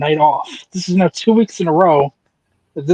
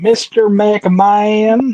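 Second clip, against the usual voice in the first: rough, pitched-up stab at a different voice; 5 semitones higher than usual. Showing how Briscoe says the line after the other speaker could not: imitating Briscoe. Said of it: "I can't do it the way Briscoe does it".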